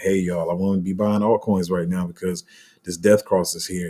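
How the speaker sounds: ordinary talk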